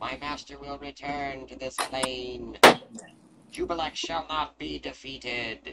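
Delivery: loud, high-pitched voice echoing through the room. Game master voicing a disembodied voice after the boss is gone, echoing voice. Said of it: "you can hear a voice echo throughout the room".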